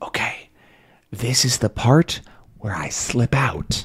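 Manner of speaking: very quiet soft voice, barely above a whisper. Voicing Tintin sneaking out, speaking very quietly. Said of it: "He says very quietly".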